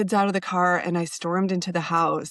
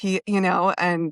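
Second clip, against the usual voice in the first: normal talking voice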